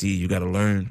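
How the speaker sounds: imitated calm speech. Retelling what a club owner told him in a packed room, imitating a calm voice. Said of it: "He said it real calmly too".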